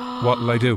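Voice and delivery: acted-out flustered, frantic, panicked tone. Retelling a classmate who lit a banger in class: imitating panic. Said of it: "And he panics".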